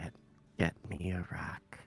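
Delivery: whispering in a put-on voice. Whispering into another character's ear in a game, asking for a rock: whispering. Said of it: "I'm gonna whisper to Galax".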